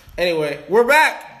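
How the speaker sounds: exaggerated, loud, high, over-the-top yell. Restarting a recording after a failed first try, yelling, over the top. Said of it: "Why'd you have to yell that?".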